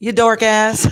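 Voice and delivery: Texas accent. Showing how Texans say a name, in a Texas drawl. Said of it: "If you're from Texas, that's what it comes out as".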